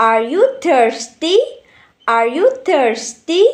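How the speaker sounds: upward rising intonation at the end. Explaining intonation to learners, giving an example: rising intonation. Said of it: "Like that".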